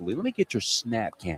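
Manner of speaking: mocking, sneering, sarcastic tone. Acting out how he said a line, mock-sarcastic tone.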